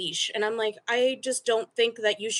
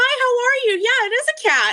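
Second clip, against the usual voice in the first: over-the-top happy, very high, loud beaming voice; 8 dB louder than usual. Speaker retells greeting strangers who stare at her cat in a stroller, retelling an overly cheerful greeting. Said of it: "the happiest person alive".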